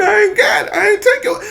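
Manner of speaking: mock loud, very high tearful crying, childlike protesting tone. Retelling a classmate denying taking the game: imitating a crying kid. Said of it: "Now he starting to cry like".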